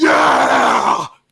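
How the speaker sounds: very low, loud, excited mock yell.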